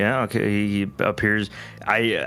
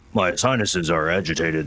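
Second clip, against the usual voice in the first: low throaty voice, pitched lower; 4 semitones lower than usual. Explaining sinus trouble to a co-player, talking low from the throat. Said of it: "so I'm talking like this now".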